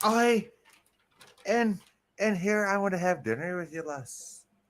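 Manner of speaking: put-on Irish accent. Acting out a movie character's line to a co-host, irish accent. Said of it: "That's an Irish accent".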